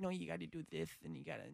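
very quiet, rough boxer voice, muttered. Imitating Mike Tyson coaching random bros: Mike Tyson voice. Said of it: "that's a great Mike Tyson voice".

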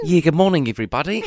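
Kiwi accent with Kiwi vowels. Asked by the host to do the kiwi accent, greeting everybody in a kiwi accent. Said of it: "Can you do the Kiwi accent?".

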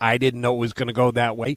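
ordinary talk

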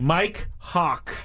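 slow, deliberate, each word carefully drawn out. Asked who they fell for, speaker says the name slowly, deliberately. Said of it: "Let me say this slowly".

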